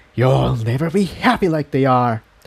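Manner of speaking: sibilant, hissing delivery. A narrator reads the thing's words to Incendia, hissing. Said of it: "the thing hissed".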